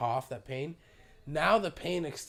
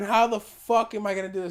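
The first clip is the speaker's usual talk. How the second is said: mock tearful, stressed-out, loud crying wail; 6 semitones higher, 8 dB louder than usual. Retelling being sick and overwhelmed and starting to cry, acting out own crying. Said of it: "And I start crying".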